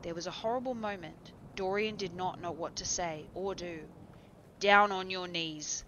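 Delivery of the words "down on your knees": menacing, loud, growled delivery. A man threatening another man gives him an order, growled. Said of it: "growled the man".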